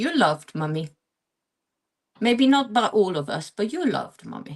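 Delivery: put-on little two-year-old toddler voice. Retelling what the speaker's two-year-old son said after a kiss; imitating son's toddler voice. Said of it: "in his kind of two years old toddly voice".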